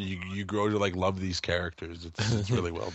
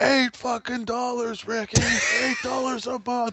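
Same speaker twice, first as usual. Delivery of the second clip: mock scream, much higher pitched. Retelling a scene where a guy in the background yells at ricky: imitating someone screaming. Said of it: "some guy in the background just screaming".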